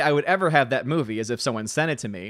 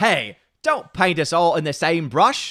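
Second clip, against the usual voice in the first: exaggerated, thick Cockney accent; 3 semitones higher than usual. Responding to a remark, in a Bert from Mary Poppins accent. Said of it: "Hope you enjoyed that beautiful accent".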